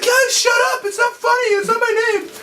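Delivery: put-on high child voice. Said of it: "he had a high voice".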